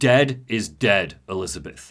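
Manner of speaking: mock chilling, ice-cold, low and slow. Speaker retells a game scene where Booker answers Elizabeth, imitating Booker's icy tone. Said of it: "he says this with like ice in his voice".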